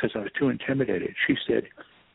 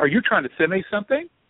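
scolding tone, voice pitched up a little; 8 semitones higher than usual. Retelling how a kind friend chewed the speaker out, retelling her raised voice. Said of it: "she raised her voice a little bit ... it sounded just like this".

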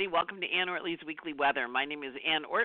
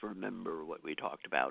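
very low, bass-deep, hushed voice; 12 semitones lower, 6 dB quieter than usual. Voicing Jupiter in Capricorn addressing the listener, in a deep Capricorn voice. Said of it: "in that deep Capricorn voice".

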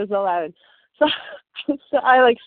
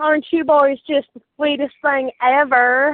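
put-on American Southern accent; 4 semitones higher than usual. Recalling a reaction while scrolling Facebook, in a Southern accent. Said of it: "did the Southern accent thing".

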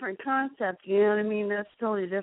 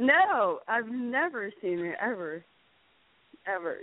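thick, knowingly insincere sarcastic tone. Teasing the other speaker about never being drunk: sarcastic. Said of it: "I'm being, um, totally sarcastic".

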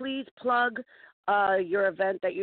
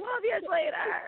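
high, slow, mock bitter tone. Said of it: "They'll be like".

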